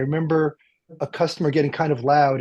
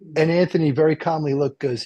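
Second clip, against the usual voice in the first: plain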